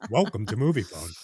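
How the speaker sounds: deep trailer announcer voice. Among several speakers, one greets listeners in the Moviefone announcer voice. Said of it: "That's like the movie phone voice".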